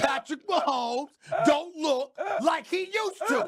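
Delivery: mock shouted impression.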